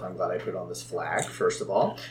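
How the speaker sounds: very quiet, low half-whisper. A player's character, hailed by an incoming signal, speaks: half-whispering to oneself. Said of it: "I whisper to myself".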